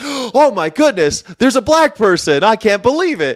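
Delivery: very high, swooping, awestruck amazed excitement. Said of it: "really excited 'cause he's never seen".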